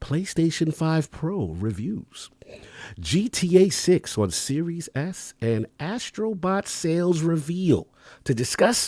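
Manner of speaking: hushed, soft, high half-whisper. A host asked to half-whisper into the mic reads the news lineup: soft half-whisper. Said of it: "Trying to do my soft".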